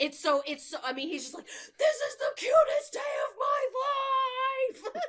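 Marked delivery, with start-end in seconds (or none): 1.5-5.0 put-on very high, very slow, loud screaming kid voice. Retelling what a kid on the playground said: imitating a kid screaming. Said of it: "the kid who is screaming on the playground".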